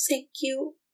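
feeble, frail, soft, weak voice. Voicing a character who thanks someone and leaves: weak voice. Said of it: "sort of like a weak voice just says".

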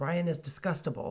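ordinary talk

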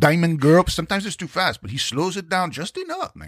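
put-on Spanish-tinged Los Angeles accent.

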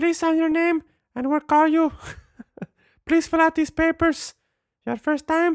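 very high put-on Mexican Spanish accent. Imitating a lady at the window: put-on mexican accent. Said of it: "my impression of Mexican ladies, they all sound like that".

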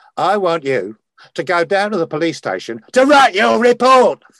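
abrupt rising shout. Acting out how he would say the line, making the actors flinch, imitating someone shouting. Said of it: "why did you shout?".

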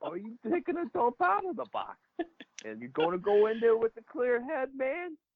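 squeaky, very high, one-of-a-kind voice. Remembering a late coach's greetings to players: imitating Kenny's voice. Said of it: "He had his own kind of voice".

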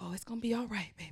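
real soothing, calming, comforting preacher voice. Showing how he calms someone's stress, in a put-on soothing pastor voice. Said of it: "I get that real soothing pastor voice".

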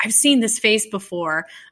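ordinary delivery

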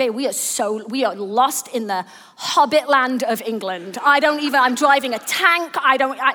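plain

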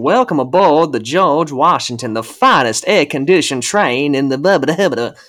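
put-on Southern American accent, announcer style. Acting out a train's welcome-aboard announcement in a Southern American accent. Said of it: "you got to do the Southern accent".

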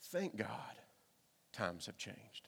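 very quiet, dry, sarcastic aside. Addressing the morning audience, a speaker adds a sarcastic aside. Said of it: "There's my sarcasm for the morning".

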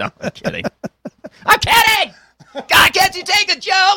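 very high, joking, insistent protesting tone. Joking about a band intro, then doing an impersonation: Dan impersonation. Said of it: "doing my Dan impersonation".

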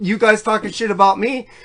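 plain

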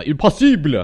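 slight put-on French accent. Retelling a passport story, the customs agent's reply in a phony French accent. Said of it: "I'm doing my little phony French accent for you there".

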